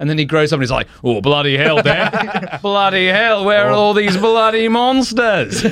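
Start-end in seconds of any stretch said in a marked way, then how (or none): 1.0-5.6 put-on Australian accent, pitched up, slow. Describing a Clash of the Titans hero grown up, imitating an Australian accent.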